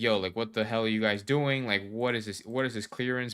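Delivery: ordinary delivery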